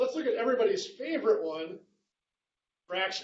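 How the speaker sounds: dry, tongue-in-cheek, sarcastic aside. Introducing fractions as the next math topic: sarcastic. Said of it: "you sense the sarcasm there".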